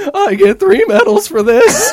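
very high, very loud, shrill, wildly swooping cartoon voice. Comparing himself to a cartoon character, quoting him: The Simpsons character voice. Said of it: "I feel like the character from The Simpsons".

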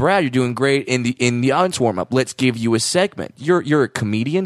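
normal talking voice

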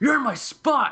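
very high, loud, angry, annoyed voice. Telling a story, repeating what they said to a man in their spot: retelling an angry retort. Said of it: "I'm so pissed off".

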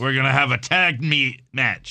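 put-on voice with fumbled, stumbling words. Retelling an announcement of a tag match during a commercial break, Teddy Long impression. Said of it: "That was a good impression of Teddy Long".

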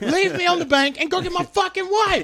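very high, adrenaline-charged, raging voice. Retelling own past words from a raft in a rapid, adrenaline raging. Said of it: "I'm adrenaline raging".

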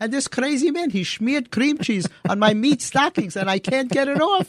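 put-on Yiddish-style accent.

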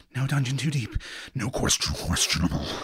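low mumble under the breath. Narrating a horned character shielding his friend from shadows, muttering to himself. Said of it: "muttering to himself".

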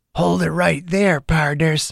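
small voice made gravelly to sound tough, put-on. Reading a story, a little boy in costume stops strangers: child's gravelly tough-guy voice. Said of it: "He made his little voice all gravelly, trying to sound tough".

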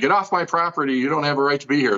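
ordinary talk

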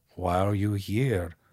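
bad put-on Austrian accent, gremlin-like voice. Imitating an audiobook author's weird Austrian gremlin accent: bad Eckhart Tolle impression. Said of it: "I'm doing it terrible".

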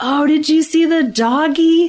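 put-on high, slow baby-talk parentese, every vowel stretched. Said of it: "talking to our babies with long syllables".

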